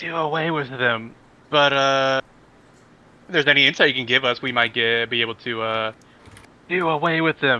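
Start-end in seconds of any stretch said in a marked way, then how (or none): 0.0-1.1 soft, quiet, soft-spoken delivery. Player in a role-play game replies to a character, speaking softly. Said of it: "and I say softly".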